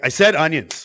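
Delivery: acted, shrill, very loud, rude snapping tone. Retelling a lady snapping at young girls serving her, imitating an angry snap. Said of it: "Like just snapping for no reason".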